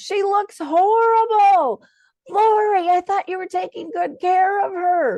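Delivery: very high, very loud, shrill screaming. Retelling how an older woman reacted to a DVD: imitating someone screaming. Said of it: "screams at the top of her lungs".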